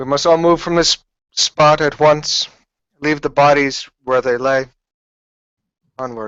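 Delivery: firm, commanding voice. Roleplayer speaking in character to the group, raised voice. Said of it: "and I raise my voice".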